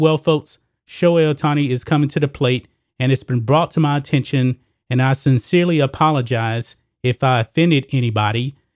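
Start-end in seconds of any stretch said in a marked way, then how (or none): none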